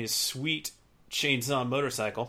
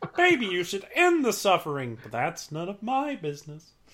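put-on frog character voice, much higher pitch; 7 semitones higher, 4 dB louder than usual. Playing the frog on the corner sipping tea, talking to Jack, in a Kermit the Frog impression. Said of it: "[name] does a mean Kermit the Frog impression".

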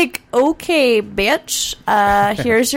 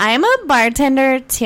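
put-on, mock-drunk girl voice, pitched higher; 3 semitones higher than usual. Retelling what a girl who came into the bar said, in a drunk girl voice. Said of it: "she talked just like that".

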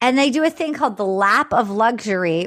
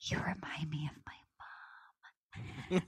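slow, hushed whisper; 7 semitones lower, 22 dB quieter than usual. Retelling what he whispered in her ear: imitating a whisper. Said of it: "he whispers in her ear".

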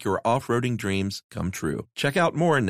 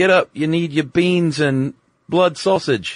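put-on British accent, loud and high; 5 semitones higher, 8 dB louder than usual. Describing an inner voice telling the speaker to get up: british voice. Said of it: "it's a British voice too".

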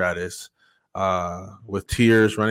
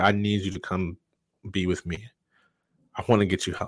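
put-on tearful voice, quieter; 5 dB quieter than usual. Retelling his mother's phone call begging him: imitating mother crying. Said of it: "she's crying".

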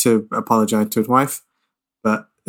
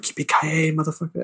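understated, tossed-off, soft, high-pitched half-whisper; 6 semitones higher, 5 dB quieter than usual. Retelling a movie scene where the hero answers on the radio: imitating a half-whisper. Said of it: "whispers, he's like".

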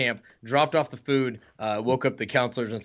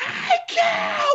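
mock scream, shrill, high, at top of lungs; 4 dB louder than usual. Acting out the hey cow game, yelling out a car window: imitating someone screaming. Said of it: "screaming at the top of their lungs".

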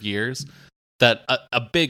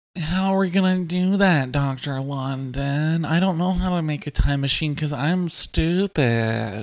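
put-on pathetic boy character voice; 6 semitones higher than usual. Reading a comedy script aloud in character: pathetic producer boy voice. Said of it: "I'll read as, it says, pathetic producer boy".

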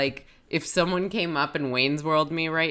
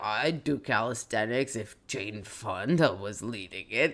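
sluggish, low, slow drawl; 6 semitones lower, 4 dB quieter than usual. Retelling a character's line in the hungover voice: hungover Al voice. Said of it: "hungover Al voice is even better".

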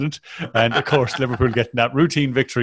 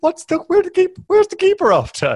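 very high, squeaky, swooping, laughing through the words; 4 dB louder than usual. Retelling someone reacting to a replay, imitating Jamie Carragher laughing. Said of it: "He's just laughing away".

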